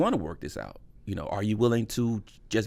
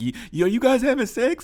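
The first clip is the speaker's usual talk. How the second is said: very high, raised, weepy crying wail; 13 semitones higher, 4 dB louder than usual. Retelling a phone call after finding out about cheating: imitating own past crying. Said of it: "I was on the phone crying".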